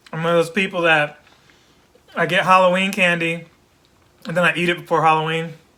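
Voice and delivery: talking with food in mouth. YouTuber eating Halloween candy while talking to viewers: talking while eating. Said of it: "Sorry, I'm eating".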